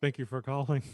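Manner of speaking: put-on flat, monotone, droning call-center voice. Recalling visits to mom's insurance office, imitating staff in a monotone call-center voice. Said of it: "The same monotone bullshit voice".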